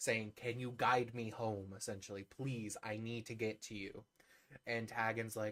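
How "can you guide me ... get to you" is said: normal talking voice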